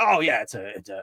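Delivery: feeble broken-down voice that breaks and falters. Retelling an interview answer, Vince McMahon broken voice. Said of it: "his fucking broken voice".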